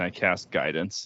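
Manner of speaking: ordinary talk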